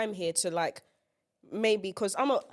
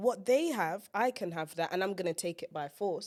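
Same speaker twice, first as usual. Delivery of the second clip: usual speaking voice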